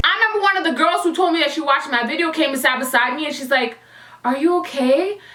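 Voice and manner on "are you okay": put-on slow, drawn-out drawl, much slower. Retelling a girl who checked on them, the speaker mimics slow, drawn-out speech. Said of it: "you took way too long to say that".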